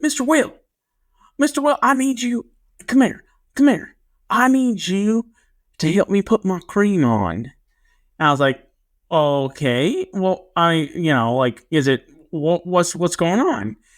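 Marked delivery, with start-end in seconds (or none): 0.0-7.3 put-on big, thick small-town Arkansas accent, pitched up. Retelling a small-town Arkansas kid coming up to him: big Arkansas accent. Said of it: "he had a really big accent".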